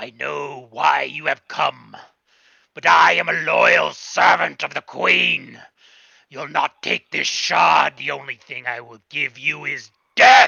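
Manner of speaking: very loud, deep, booming, creaky, resounding dragon voice. Narrating a scene, the speaker voices a dragon-like creature confronting the listener: deep booming dragon voice. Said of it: "a deep, booming voice".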